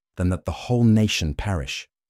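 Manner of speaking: ordinary delivery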